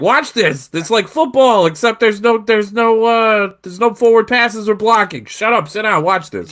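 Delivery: put-on high drunken yell. Describing his job getting bar patrons to watch rugby league: imitating drunk guy yelling. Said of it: "I'm the drunk guy at the bar yelling".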